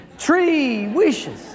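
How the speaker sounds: very high, put-on Portuguese accent. Telling a joke, voicing the genie offering three wishes, in a Portuguese genie accent. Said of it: "was a Portuguese genie".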